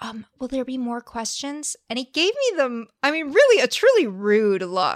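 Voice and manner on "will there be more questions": put-on whisper, quieter. Retelling hustling over to ask the man with the microphone: retelling a whispered question. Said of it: "coming to whisper this question".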